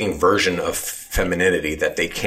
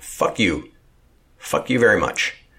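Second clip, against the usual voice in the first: slow, deliberate, furious dismissive tone; 3 semitones higher than usual. Ranting to another speaker after admitting to real anger: angry. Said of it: "I'm actually very fucking angry about all this".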